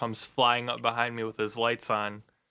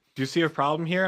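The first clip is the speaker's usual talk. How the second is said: ordinary delivery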